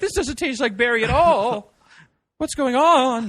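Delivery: shrill, high, loud, wavering warbly voice. Imagining someone drinking a ghost berry drink, the speaker talks in a warbly voice. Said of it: "that warbly voice".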